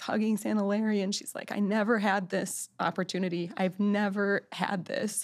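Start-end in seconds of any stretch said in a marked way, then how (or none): 1.5-5.2 put-on, tearful mock-weeping woman's voice, slower. Retelling a grandmother weeping while hugging santa, imitating a woman weeping. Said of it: "she's just weeping".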